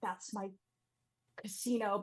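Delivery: soft, visibly frustrated objecting tone. Narrating a character forced to leave her casino, frustrated. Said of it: "She's like visibly frustrated".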